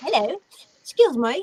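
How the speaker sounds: put-on high-pitched British accent. Retelling what a man said to the speaker during a break, British accent. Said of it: "in his, his British accent".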